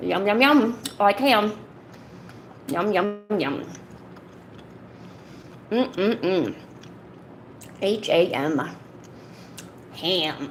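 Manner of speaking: talking with mouth full. Doing ham-eating asmr for viewers, eating while talking. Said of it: "enjoy some ham eating A S M R".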